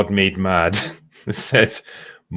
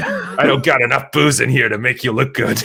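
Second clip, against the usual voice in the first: mock-polite, faux polite cartoon voice; 4 semitones higher than usual. Retelling a line from an episode: imitating Moe Szyslak. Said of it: "He's like".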